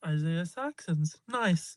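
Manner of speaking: put-on familiar tone. Retelling a stranger's remark at the movie credits, imitating someone talking like he knows the director. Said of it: "he's saying this like he knows the dude".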